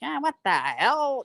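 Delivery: put-on genuine Chicago accent. Imitating a mother who is real Chicago: imitating mother's Chicago accent. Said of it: "My mother's a real Chicago".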